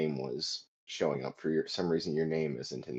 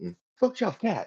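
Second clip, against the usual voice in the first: loud, very high-pitched yell; 4 dB louder than usual. Narrating a friend's reaction to a toppling bookshelf: yelling out. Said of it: "as you hear one of your other friends yell out".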